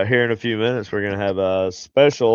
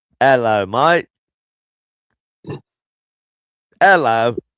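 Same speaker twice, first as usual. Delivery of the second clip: put-on, shaky Australian accent drifting into Irish; 3 semitones higher, 3 dB louder than usual. Trying an accent that a listener heard as Irish: attempted Australian accent. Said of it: "It was supposed to be Australian".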